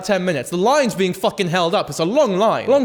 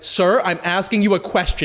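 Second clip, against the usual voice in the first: put-on offended tone. Retelling a customs questioner's reply: imitating an offended reply. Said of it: "he was very offended at that".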